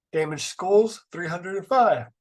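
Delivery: speaking through a yawn. Reading out a list of damage figures, the speaker goes on yawning while speaking. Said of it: "Sorry for you for yawning".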